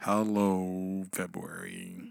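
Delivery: low, mopey, glum, drawn-out delivery. A podcast host repeats the greeting to February in an Eeyore voice. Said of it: "I'm thinking of Eeyore right now".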